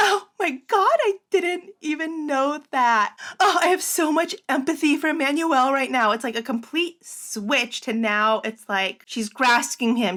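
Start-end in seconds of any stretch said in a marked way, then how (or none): 0.0-6.1 acted shocked gasp, higher pitch. Retelling a mother's sudden reaction on set: imitating a shocked gasp. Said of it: "gasps, and she's like".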